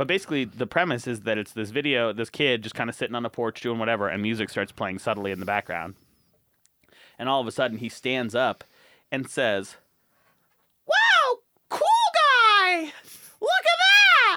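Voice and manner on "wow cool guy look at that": put-on voice, very high and very slow. Retelling a video where a kid suddenly stands up and says this, way too high voice. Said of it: "in a way too high voice".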